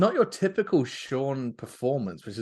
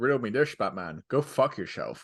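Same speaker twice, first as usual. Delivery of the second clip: put-on Scottish accent. Imitating an actor playing the Riddler: Sean Connery impression. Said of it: "knowing Sean Connery be like".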